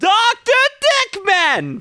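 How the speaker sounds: very high, sing-song, swooping rock-and-roll clown voice. Introducing oneself on the show, sounding like Doctor Roxo. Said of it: "You sound like Doctor Roxo".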